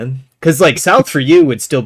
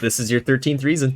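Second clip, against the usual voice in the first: ordinary talk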